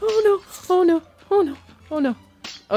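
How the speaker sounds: panicked, anxious voice. Playing a game on stream with Alex, anxious panicking. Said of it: "this is so much anxiety".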